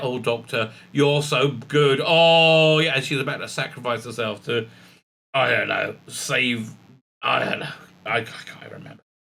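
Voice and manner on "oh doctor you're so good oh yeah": slow, adoring, fawning, gushing tone. Mocking the companions who praise the Doctor: imitating fawning companions. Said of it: "they all stood around saying".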